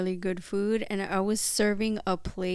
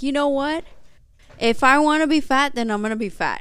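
very loud, furious, pitched up; 5 semitones higher, 9 dB louder than usual. Retelling a reply to a man who said the speaker would get fatter, retelling an angry retort. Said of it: "I was so pissed".

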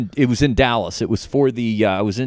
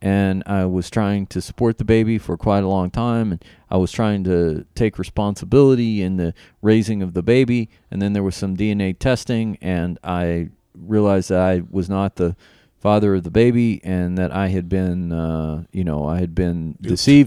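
level, flat, low, uninflected matter-of-fact monotone; 4 semitones lower than usual. Retelling what Diego said when asked about his Twitter, imitating his flat, soft voice. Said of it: "no animation or inflection in his voice".

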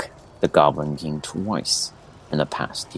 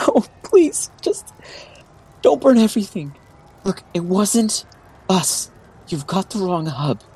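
very high, frightened, pleading whimper; 14 semitones higher than usual. Narrating to the players, voicing a woman heard around the corner, whimpering. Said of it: "You hear like a woman's whimper".

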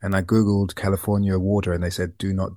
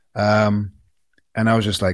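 ordinary delivery

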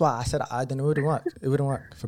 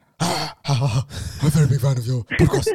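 put-on demonic, possessed voice, louder; 6 dB louder than usual. Retelling a new follower's voice note, imitating a demonic voice. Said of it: "this voice note was a demonic voice note".

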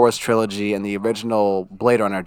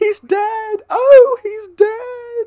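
put-on theatrical old-style cry, much higher, louder, slower; 5 dB louder than usual. Retelling a movie scene, imitating Lady Jessica's over-the-top cry. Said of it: "super over-the-top Arthurian, Shakespearean cry".

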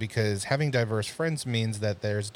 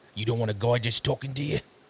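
slight, lightly done Australian accent. A speaker acts out a line to a woman, in a slight Australian accent. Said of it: "That was a little Australian".

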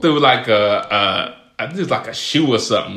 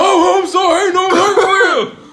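very high, irritated, mad tone; 4 dB louder than usual. Retelling his reply after the mom started crying: imitating someone getting mad. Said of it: "He got mad and ran away".

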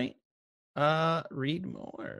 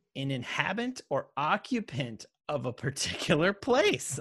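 normal talking voice

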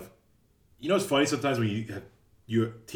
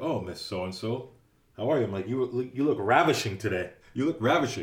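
ordinary delivery

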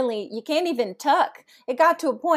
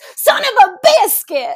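very loud, high, shrill, drawn-out top-of-the-lungs yell; 9 semitones higher, 11 dB louder than usual. Recounting yelling at a gymnast at a meet, retelling a top-of-lungs yell. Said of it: "I just yelled at the top of my lungs".

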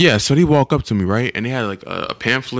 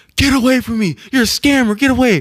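very high, all-out, full-lung yell; 3 dB louder than usual. Speaker recounts a kid on the tour yelling at a lady, retelling a yell. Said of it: "he yells at the top of his lungs".

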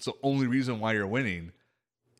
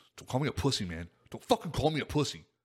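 mock angry voice, acted anger. Retelling what a player said mid-game after being called a name, mock-angry retelling. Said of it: "he was getting pissed".

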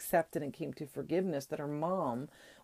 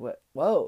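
raised, emotional, a little overcome; 6 dB louder than usual. Retelling a TV scene where Grace reacts to hard words: imitating Grace getting emotional. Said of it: "backs up and gets a little emotional about this".

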